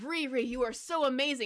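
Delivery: ordinary talk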